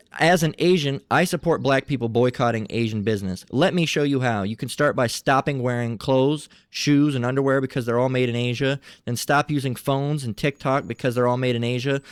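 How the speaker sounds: usual speaking voice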